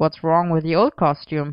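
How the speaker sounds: plain reading voice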